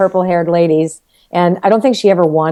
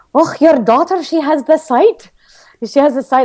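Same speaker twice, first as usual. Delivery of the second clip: put-on Scottish brogue, pitched up; 7 semitones higher than usual. Recalling overhearing Mrs. Kelly talking to her mother, in Mrs. Kelly's Scottish brogue. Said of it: "in her Scottish brogue".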